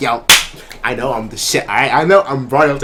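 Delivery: self-satisfied, smug, cocky bragging tone. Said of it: "He's like".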